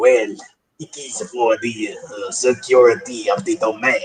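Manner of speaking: clumsy, really bad put-on French accent. Player voicing Abdul, who attempts a Delano accent, really bad French accent. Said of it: "he attempts to do a Delano accent when he does this, which is just Abdul doing a really bad French accent".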